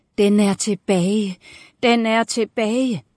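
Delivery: voice full of panic. Narrator reading a woman crying out as she paces the corridor; panicked voice. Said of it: "Med panik i stemmen".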